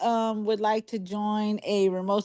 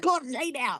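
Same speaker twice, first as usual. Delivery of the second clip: mock yelling in a put-on dog voice; 4 semitones higher, 3 dB quieter than usual. Retelling how the dog yells at her: imitating a dog yelling. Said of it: "she goes and yells at her".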